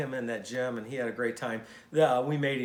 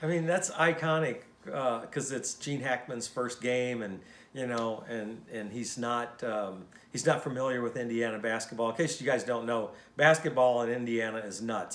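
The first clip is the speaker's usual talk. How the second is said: ordinary talk, nothing marked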